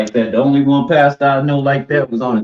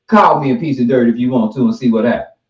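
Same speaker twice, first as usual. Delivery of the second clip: normal talking voice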